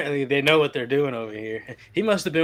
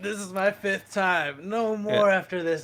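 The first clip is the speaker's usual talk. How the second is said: slow, pitched-up, drawn-out begging plea; 5 semitones higher than usual. Retelling a TV scene where a wife apologizes: imitating someone pleading. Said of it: "pleading, pleading".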